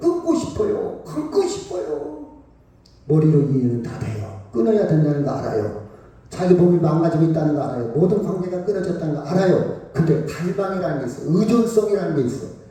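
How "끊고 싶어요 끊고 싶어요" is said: put-on crying, slow, tearful, begging pleading voice. Retelling what drug addicts say to the speaker: imitating someone crying while pleading. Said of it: "막 울면서 저한테 그래요".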